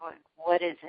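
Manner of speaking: severe, stern tone. Recounting approaching Mister Robinson after a game, retelling his stern voice. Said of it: "kind of a stern voice".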